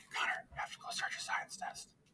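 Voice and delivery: soft, barely voiced whisper. Copying another person who was whispering, quietly telling connor something: whispering. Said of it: "so I wanna whisper too".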